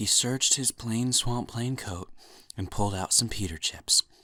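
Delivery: soft ASMR-style whisper. Reading a story aloud for an asmr video: asmr whisper voice. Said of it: "in the A S M R whisper voice".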